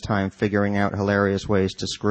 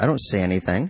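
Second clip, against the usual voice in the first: usual speaking voice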